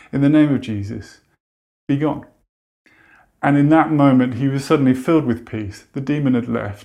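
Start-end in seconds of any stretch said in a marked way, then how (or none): none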